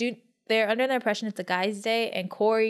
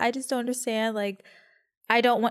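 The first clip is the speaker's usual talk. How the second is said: play-acted tearful crying through the words. Retelling a scene where Anissa is crying: imitating Anissa crying. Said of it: "And so she's crying".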